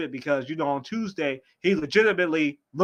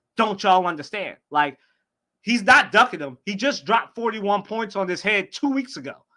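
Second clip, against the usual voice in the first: ordinary talk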